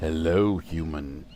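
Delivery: huge, very low, very deep giant's voice. Narrating a story, a sixteen-foot figure in green greets a human, booming. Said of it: "he booms".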